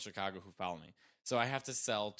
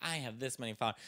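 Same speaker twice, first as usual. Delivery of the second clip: usual speaking voice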